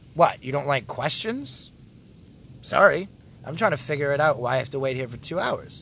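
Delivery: normal talking voice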